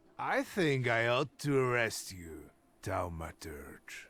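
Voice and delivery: put-on tipsy-sounding speech. Telling the Thaumaturge he ought to arrest him: sounding half drunk. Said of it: "Why do you sound half drunk?".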